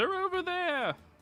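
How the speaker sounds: very high, loud shouted call-out. Voicing a townsperson who spots the party: townsperson shouting. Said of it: "One of the townspeople shouts out".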